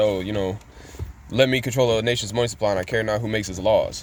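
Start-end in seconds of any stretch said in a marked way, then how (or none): none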